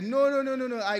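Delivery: alarmed, high, loud, fast voice.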